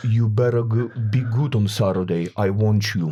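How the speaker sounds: imitated Russian accent. Retelling what the big wrestler told him after his injury: russian accent. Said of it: "With the Russian accent".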